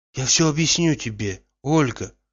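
plain

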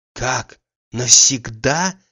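amazed, astonished, surprised. Pulling back from the embrace, a man asks the other, astonished. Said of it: "с изумлением спросил Штольц".

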